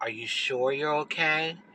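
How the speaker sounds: imitated hushed voice. Retelling a man asking the speaker again if she is okay, retelling a lowered almost-whisper. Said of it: "he kind of lowers his voice like he's whispering almost".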